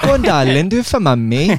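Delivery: put-on Welsh accent. Speakers taking turns trying a Welsh accent; Welsh accent. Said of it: "Just give me a rough start".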